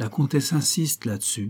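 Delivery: ordinary delivery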